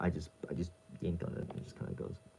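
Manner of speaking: hushed, very quiet, breathy, indistinct muttering. Talking while untangling thread, mumbling. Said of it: "Sorry, I'm mumbling".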